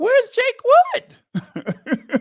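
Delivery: voice gone very high, swooping and loud. Retelling own surprised reaction to a stranger: voice gone all high. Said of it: "My voice got all high".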